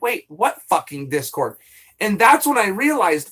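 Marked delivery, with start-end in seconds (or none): none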